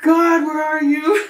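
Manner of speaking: very loud, very high, drawn-out scream. Recalling busting a mirror with a hammer; retelling a scream. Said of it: "I just screamed out".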